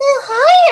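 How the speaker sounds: very high-pitched cartoon marshmallow voice. Trying old character voices again, the speaker greets everyone in a cartoon marshmallow voice. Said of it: "It's starting to go into my marshmallow voice".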